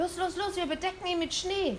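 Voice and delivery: very high, urgent hissing. As someone's mother unlocks the front door, he urges his companion: hissed. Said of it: "zischte er".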